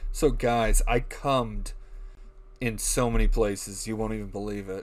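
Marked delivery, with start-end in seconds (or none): none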